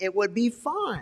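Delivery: high, mocking put-on voice. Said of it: "how many of y'all believe that same lie".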